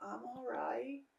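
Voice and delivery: tiny, high, very hushed little voice. Retelling how she answers when asked if she's okay, in a tiny little voice. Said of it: "Like in this tiny little voice".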